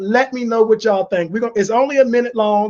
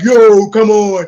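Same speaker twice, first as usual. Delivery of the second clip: loud, deep, rumbling bass voice, laid on; 7 dB louder than usual. Recalling a voice he practiced for two days, the speaker does it: put-on deep voice. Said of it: "I got my voice deep".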